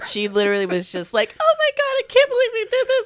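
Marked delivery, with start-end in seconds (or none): 1.4-3.1 very high, tearful, overjoyed disbelief. Retelling a proposal where the woman was overjoyed: imitating someone crying with joy. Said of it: "And she's just crying".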